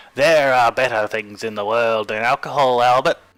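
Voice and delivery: loud, put-on Australian accent. Reading the Death quotes aloud as he did, in an Australian accent. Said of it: "read all the death quotes in an Australian accent".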